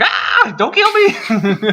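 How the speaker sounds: very high, very slow, swooping wailing scream. Retelling being chased by a charging boss in a game: imitating own past scream.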